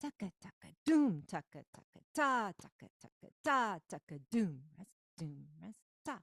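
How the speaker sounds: loud punched doom and ta, soft taka takas. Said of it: "these are kind of just more like quieter notes".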